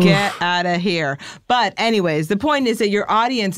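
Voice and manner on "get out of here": ordinary talk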